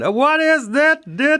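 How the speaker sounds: very high, drawn-out put-on Dutch accent. Retelling what a man said, imitating his Dutch accent. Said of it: "because he's got this Dutch accent".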